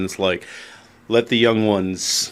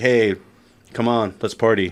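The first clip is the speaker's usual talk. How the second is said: ordinary talk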